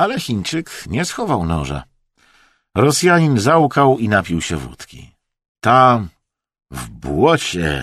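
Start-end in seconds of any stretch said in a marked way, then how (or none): 5.6-7.8 low, hoarse, rasping, croaked-out words. The sobbing Russian, after a drink of vodka, rasps out his answer. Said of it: "wychrypiał".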